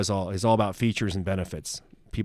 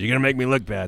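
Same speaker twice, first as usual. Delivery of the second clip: put-on speaking with a Texan accent; 2 semitones higher than usual. Recalling an old boss who pulled salespeople into the hallway, imitating Ron's voice. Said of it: "that was his voice".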